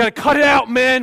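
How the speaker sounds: high-pitched, very loud preacher-style yelling. Retelling a preacher's sermon to the men, retelling a preacher's shout. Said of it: "just starts shouting".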